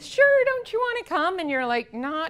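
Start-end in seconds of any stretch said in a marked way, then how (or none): 0.0-1.4 very high, bubbly, cheerful put-on chirpy voice. A recreation therapist acts out coaxing people in the lounge to her group; mock-chirpy and happy. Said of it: "I'm all chirpy and happy".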